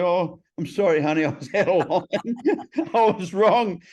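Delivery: high, sheepish, laughing delivery.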